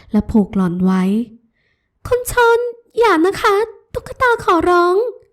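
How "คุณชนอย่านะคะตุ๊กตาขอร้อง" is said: very high, terrified, tearful begging. A woman chained by the ankle pleads with the man who tied her, begging in fear, in tears. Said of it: "ด้วยความกลัวหล่อนน้ำหูน้ำตาไหล".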